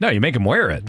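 ordinary talk

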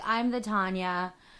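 ordinary delivery

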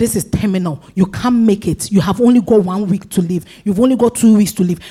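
ordinary delivery

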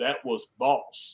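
calm, breathy, hushed voice. Retelling a man's remark after a hard hit, calm James Earl Jones voice. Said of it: "with that James Earl Jones voice".

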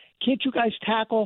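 put-on screaming. Describing a fan watching a game, imitating them screaming at the television. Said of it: "You're screaming at the television".

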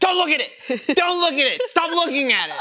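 mock very high, repeated shouted yelling. Recounting watching John and Chris play a game; imitating John yelling. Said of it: "And then John yells".

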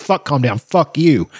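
put-on, high-pitched, furious outburst full of cursing. Speaker retells screaming at a man who told him to calm down, retelling an angry scream. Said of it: "And started screaming at him".

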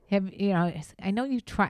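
normal talking voice

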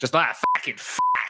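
fake Boston accent, u said as a. Joking that a boston accent is easy to do: fake boston accent. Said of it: "It's very easy to do a Boston accent".

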